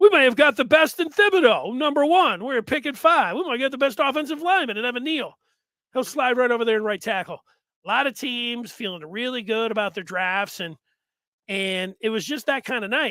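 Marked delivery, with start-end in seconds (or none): 0.0-7.4 put-on New York accent with raised pitch. Voicing a Giants fan after the draft: attempted New York accent. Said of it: "I don't have really a, a, a New York accent".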